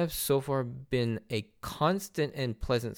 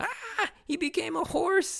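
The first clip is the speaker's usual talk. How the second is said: put-on very high, drawn-out, stunned, shocked shriek. Recapping an anime scene, the speaker acts out Aisa's mock-shocked scream. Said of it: "shocked, screaming".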